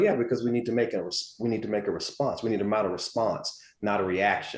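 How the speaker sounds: most composed, unruffled, calm, soft tone. Quoting a sister who works at the FBI: imitating someone speaking very calmly. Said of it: "she would say it in the most calm way".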